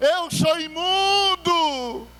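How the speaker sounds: high, slow, ashamed crying shout.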